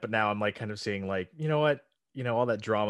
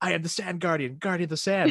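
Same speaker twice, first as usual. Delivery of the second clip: put-on all-out screaming, high-pitched; 8 semitones higher, 4 dB louder than usual. Retelling a favorite Vine where a buried guy screams: imitating someone screaming. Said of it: "he starts screaming".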